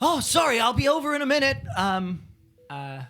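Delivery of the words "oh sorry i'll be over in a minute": very loud, high-pitched shout. As you walk in, a voice from an adjoining room calls out, shouting from another room. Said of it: "sort of shouts through".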